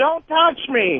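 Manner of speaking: mock small child crying out, screaming but held in. Retelling how a little girl at the mall reacted: imitating a child screaming. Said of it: "she screams out".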